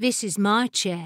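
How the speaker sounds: ordinary delivery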